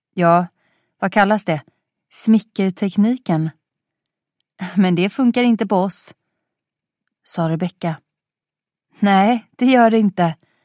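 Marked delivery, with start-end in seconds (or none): 9.0-10.4 triumphant, higher and louder. Johanna answers Rebecka in the kitchen, raising her glass, triumphant. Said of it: "höjde triumferande sitt glas".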